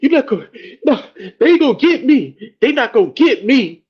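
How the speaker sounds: breathless, very high-pitched, loud panting panic. Retelling rushing into the house as if chased: imitating breathing hard and heavy. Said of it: "I come in breathing hard and heavy".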